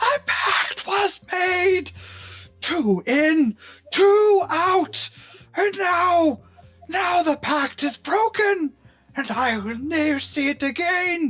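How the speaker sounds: very high, furious, full-lunged, drawn-out scream. Voicing a creature launching at a player in attack: screaming at the top of her lungs. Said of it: "screaming at the top of her lungs".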